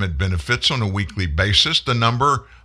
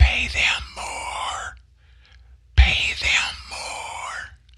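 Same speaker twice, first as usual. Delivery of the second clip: very slow, hushed, breathy whisper; 13 semitones higher, 5 dB quieter than usual. Retelling what Joe Biden whispered to business owners: imitating Joe Biden whispering. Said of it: "Here's what he whispered to business owners".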